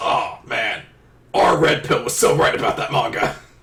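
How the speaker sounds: put-on douchey dude-bro voice. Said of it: "the two guys we gave the douche bro voice".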